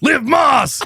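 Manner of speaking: very loud, very high-pitched top-of-lungs shout. Speaker retells a TikTok where a man yells his slogan at Taco Bell, retelling a top-of-lungs yell. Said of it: "yells their slogan at the top of his lungs".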